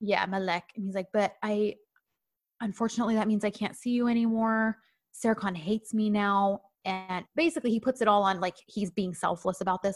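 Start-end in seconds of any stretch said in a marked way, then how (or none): 1.1-6.6 acted-up, forlorn, upset tone of sorrow and hurt. Retelling what a man said to a woman, imitating forlorn and upset. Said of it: "he starts acting all forlorn and upset".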